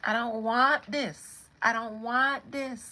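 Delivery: loud, high Barbadian patois accent.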